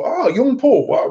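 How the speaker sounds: put-on very high-pitched elderly man voice. Showing how an 87-year-old coworker talks: imitating Jim's voice. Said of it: "He, he talks like".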